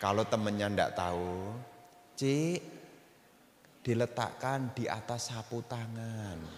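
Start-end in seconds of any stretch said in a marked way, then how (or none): 2.2-6.4 gentle, soft-spoken, polite tone. Teaching how to tell a friend something without being harsh, in a gentle, soft tone. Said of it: "ngomongnya pakai halus".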